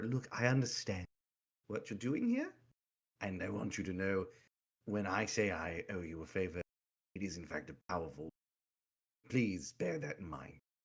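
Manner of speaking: low, hushed, confidential half-whisper. Player's character extends a hand and speaks to her privately, half-whispering. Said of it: "whisper to her".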